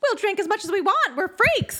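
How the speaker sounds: very high character voice pushed through the nose. Quoting the Bearded Lady's line the way it's voiced, nasally Bearded Lady voice. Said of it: "it's very nasally".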